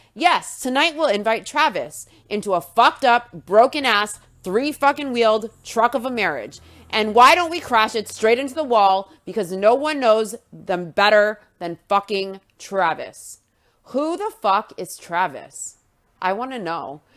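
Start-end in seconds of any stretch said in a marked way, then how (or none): none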